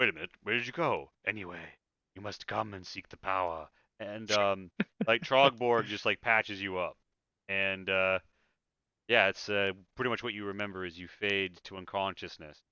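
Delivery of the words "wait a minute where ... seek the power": speaking in a dragon character voice. Narrating a game, the storyteller speaks as the returning dragon, in a dragon's voice. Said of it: "the dragon's voice returns and says".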